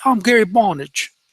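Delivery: put-on British accent. Imitating the podcast character Gary Bonnage in his fake British accent. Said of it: "the fake British accent".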